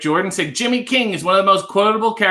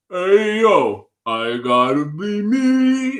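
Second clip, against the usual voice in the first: very slow drawl with the word "me" stretched. Trying a chat suggestion for an impression: Sylvester Stallone impression. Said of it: "You start a Sly Stallone impression with".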